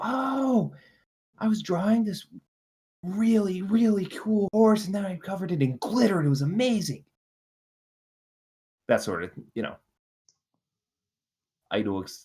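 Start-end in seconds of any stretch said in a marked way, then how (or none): 0.0-7.0 put-on very high, gushing, excited little-kid chatter. Acting out a child's chatter about a school drawing: excited kid chatter. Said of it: "excited chatter".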